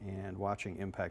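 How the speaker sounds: ordinary delivery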